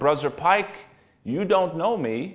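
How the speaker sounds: put-on thick, heavy Russian accent. Retelling a man shaking another man's hand, in a thick russian accent. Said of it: "said in a thick Russian accent".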